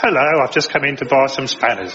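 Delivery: put-on nerdy character voice. Recalling a comedy sketch, playing a customer entering a shop, in the nerd voice. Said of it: "we'd always do the nerd's voice".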